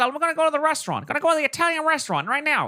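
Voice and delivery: old-timey put-on transatlantic accent, vintage sounding. Imagining how Charizard might talk, Charizard with transatlantic accent. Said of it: "I can imagine him talking a little bit like this".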